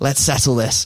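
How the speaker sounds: put-on weird hybrid accent, half Danish, half Manchester. Retelling a 2 a.m. challenge to Keane, in a weird half-Danish, half-Manc accent. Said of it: "Don't know what that accent was".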